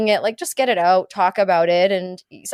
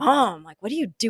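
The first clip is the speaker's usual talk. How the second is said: put-on grossed-out, disgusted teenage whining voice; 5 dB quieter than usual. Retelling how her son caught her at the candy drawer, imitating disgusted son. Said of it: "Like so disgusted".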